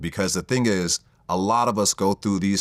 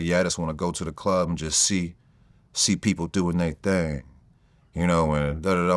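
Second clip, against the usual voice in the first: lazy, loose put-on voice with slack, hanging bottom lip. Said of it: "the way he said it in that [name] voice, he had the, the kind of like that bottom lip hanging, like".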